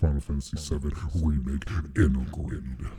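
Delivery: demonic voice with echo. Trying out a demon voice, the speaker says the game title in an echoing devil voice. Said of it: "That just sounds like the devil, but echo".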